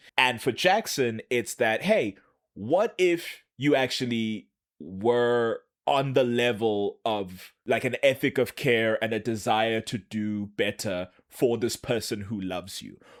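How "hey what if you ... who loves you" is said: plain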